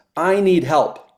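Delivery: mock, full-throated scream at the top of lungs. Retelling being caught in a rip at sea: retelling a scream for help. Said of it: "I screamed at the top of my lungs".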